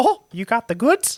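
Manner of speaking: pitched high and cartoonish. Acting out buying in bulk: Mickey Mouse voice. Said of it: "what Mickey would have sounded like".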